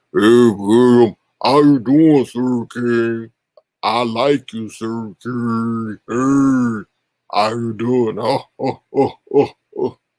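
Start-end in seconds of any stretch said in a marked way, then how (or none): 0.2-8.2 bad put-on baritone voice. Doing a bad impersonation of william with his baritone voice. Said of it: "That was a bad impersonation".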